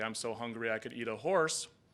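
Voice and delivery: ordinary talk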